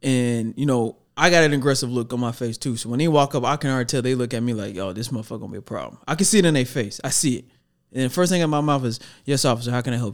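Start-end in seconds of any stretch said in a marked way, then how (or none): 9.2-10.1 mock flat, emotionless, unaggressive tone. Retelling what you said to a police officer who pulled you over: imitating a flat emotionless tone. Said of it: "No emotion to it, no aggression to it".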